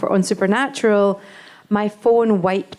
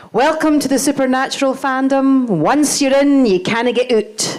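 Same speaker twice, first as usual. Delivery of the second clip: put-on speaking with Scottish accent; 4 semitones higher, 3 dB louder than usual. Quoting what a fan said at a first convention, imitating Tia's Scottish accent. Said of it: "in a, her Scottish accent".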